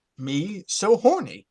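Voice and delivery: bone-dry, dead straight delivery. Performing a line on request for a soundboard clip: David Hyde Pierce deadpan reading. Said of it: "a Frasier-esque, like, David Hyde Pierce reading".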